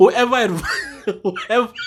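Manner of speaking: talking through laughter. Apologizing for laughing while making a point: laughing while talking. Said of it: "I'm sorry for laughing".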